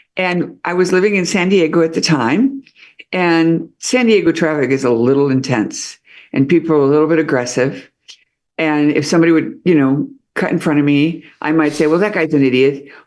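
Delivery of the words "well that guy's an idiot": usual speaking voice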